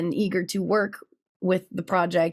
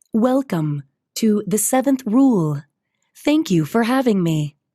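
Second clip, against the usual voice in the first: computer assistant voice, higher and louder; 3 semitones higher, 6 dB louder than usual. Showing the ship's computer voice after being challenged to prove it: ship's computer voice. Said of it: "I basically just talk like this".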